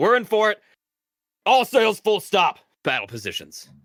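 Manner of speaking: shrill, booming, very loud, high yelling. Narrating a game, the captain calls out as battle begins, kind of yelling out. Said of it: "kind of yells out".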